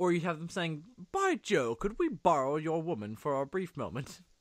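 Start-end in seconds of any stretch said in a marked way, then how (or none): 1.1-4.2 very posh, elaborately genteel, sophisticated, swooping refined voice. Pitching a funnier version of a scene's dialogue; super sophisticated voice. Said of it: "super sophisticated".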